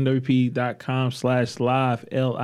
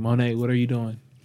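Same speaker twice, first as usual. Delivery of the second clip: ordinary delivery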